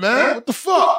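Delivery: high, slow, exasperated outburst. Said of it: "You wanna be like".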